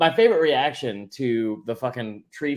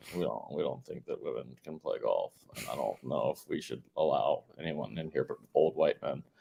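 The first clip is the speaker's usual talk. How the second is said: put-on gruff coach voice, lower and quieter; 11 semitones lower, 10 dB quieter than usual. Mocking the Masters organizers' attitude in a Belichick voice. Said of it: "That's a pretty good Belichick".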